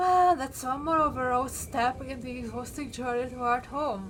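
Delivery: words stretched out, yawning through them. Commenting while playing through a puzzle game, yawning mid-sentence. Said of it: "I was yawning in the middle of a sentence".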